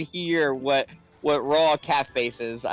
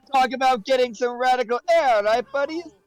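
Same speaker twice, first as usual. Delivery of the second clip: very high, fake, put-on Jamaican accent; 10 semitones higher, 3 dB louder than usual. Playing a game with friends, doing a voice: put-on jamaican accent. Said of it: "Now I'm doing the voice".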